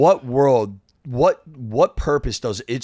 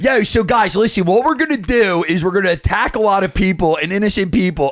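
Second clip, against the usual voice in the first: put-on heavy Philly accent, pitched high; 8 semitones higher, 4 dB louder than usual. Imagining a politician speaking in the speaker's own Philly accent: Netanyahu with a Philly accent. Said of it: "Imagine if Netanyahu had my accent".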